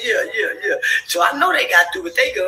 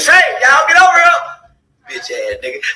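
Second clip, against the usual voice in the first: imitated yell, higher, louder; 8 semitones higher, 8 dB louder than usual. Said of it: "I started hollering for help".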